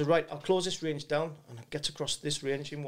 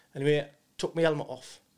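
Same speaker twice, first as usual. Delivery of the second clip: plain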